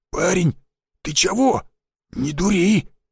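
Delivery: scared, fumbling, frightened babble. An old forester with a blade at his throat, frightened babbling. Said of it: "испуганно пролепетал старик".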